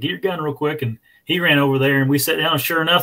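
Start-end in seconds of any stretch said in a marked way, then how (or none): 0.0-0.8 mock urgent, pitched-up voice, called out. Retelling calling to a buddy to get his gun: retelling a yell. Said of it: "I yelled at my buddy".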